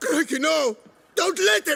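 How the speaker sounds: high, loud, terrified pleading.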